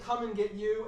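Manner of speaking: plain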